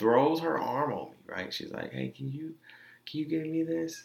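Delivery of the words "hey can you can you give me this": play-acted, high, sugary sweet-talking, coaxing voice. Retelling how she asked them to pay at the counter: imitating sweet talking. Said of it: "Sweet talking".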